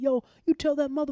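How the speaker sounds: shrill high loud screaming. Recounting taking a man for a walk, retelling how he screamed. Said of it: "he's screaming like".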